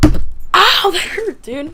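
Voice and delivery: very slow, loud, high, drawn-out cry of pain. Speaker hits their hand mid-story, sudden pain. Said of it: "I actually just hit my hand".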